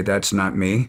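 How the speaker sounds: plain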